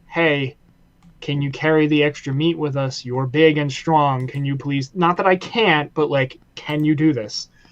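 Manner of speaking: normal talking voice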